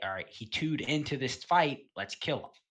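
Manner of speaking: ordinary delivery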